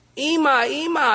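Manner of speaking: put-on high, pesky, annoying small child voice. Speaker imitating how kids say the word, in a high-pitched annoying kid voice. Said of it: "in that high-pitched, annoying little voice kids do".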